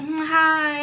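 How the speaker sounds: high, play-acted, phony, insincere little tone. Retelling meeting someone who answered her hi, imitating Bougie's fake little hi. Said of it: "Like a little fake little hi".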